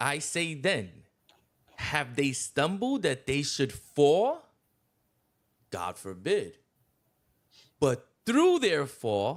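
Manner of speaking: slow, deliberate reading aloud, word by word. Speaker reads a passage aloud to the others, reading slowly. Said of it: "I'm gonna read it slow".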